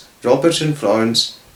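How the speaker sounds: ordinary delivery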